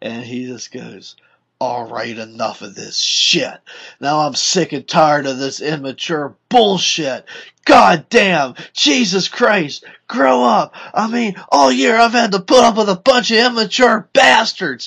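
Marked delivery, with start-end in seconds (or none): 1.6-14.9 mock furious rant, very loud and rising. Retelling how a fed-up bus driver scolded the students, imitating an angry rant. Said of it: "you could tell he was just pissed".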